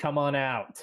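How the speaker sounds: calling out, pitched high. Voicing a character calling toward rustling across the river: yelling. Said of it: "he yells".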